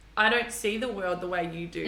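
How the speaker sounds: ordinary talk, nothing marked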